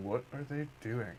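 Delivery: whispering. Speaker whispers a question about the others they are watching: whispering. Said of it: "I'm just whispering like".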